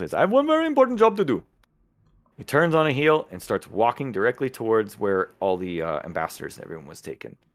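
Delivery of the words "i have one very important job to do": put-on Indian accent, pitched up. Narrating a story, the speaker voices a man who talks in an Indian accent. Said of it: "So he talks like an Indian".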